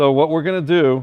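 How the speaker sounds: very loud, high-pitched yell. Starting to explain the plan for applying it to her head: yelling. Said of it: "why am I yelling?".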